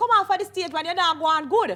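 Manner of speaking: loud, high crowd jeering and heckling.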